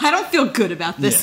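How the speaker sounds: amused, chuckling, laughing, smiling-through-it voice. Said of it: "That's exactly how Grant says it".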